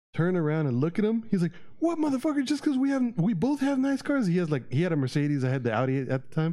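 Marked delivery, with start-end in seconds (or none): 1.7-4.2 put-on, very high-pitched, shrieking screaming outburst. Retelling how a man out of his car yelled: imitating someone screaming. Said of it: "started fucking screaming".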